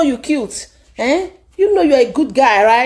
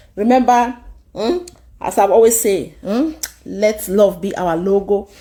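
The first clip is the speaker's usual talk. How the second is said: ordinary talk, nothing marked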